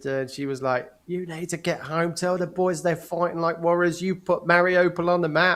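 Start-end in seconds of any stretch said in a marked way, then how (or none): 1.1-5.6 loud screaming, ranting voice. Man retells what his wife shouted at him down the phone, retelling her screaming. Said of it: "she started screaming at me down the phone".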